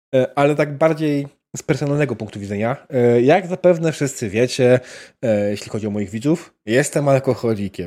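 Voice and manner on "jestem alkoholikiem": weary, tired-sounding tone. Telling the viewers something repeated too often: weary voice. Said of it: "mówię to takim znużonym głosem".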